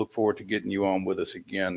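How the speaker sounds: ordinary delivery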